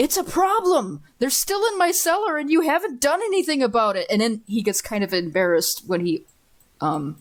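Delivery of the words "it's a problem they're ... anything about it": very high, slightly raised, insistent complaining tone. Acting out a man who keeps coming every week, the speaker retells him getting louder. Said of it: "gets a little louder".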